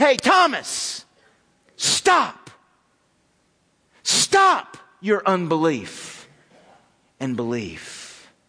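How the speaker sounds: harsh, deliberate scolding tone. Showing how Jesus's words to Thomas should sound: harsh rebuke as Jesus. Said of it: "we should hear it sound like this".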